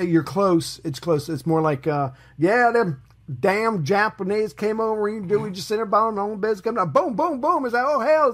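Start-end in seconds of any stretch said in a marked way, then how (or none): 1.8-8.3 put-on over-the-top, high-pitched rural American accent. Retelling how Americans tell the Pearl Harbor story: exaggerated rural American accent. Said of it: "that's kind of what I was doing".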